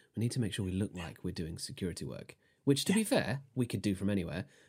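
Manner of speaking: hushed, said very quietly. Planning with the group while a merchant prince watches, speaking very quietly. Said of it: "and I'm saying this very quietly".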